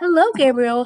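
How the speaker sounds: lilting singsong tone. Reading a story aloud, a girl greets a sleeping baby: sing-song voice. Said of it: "she said in a sing-song voice".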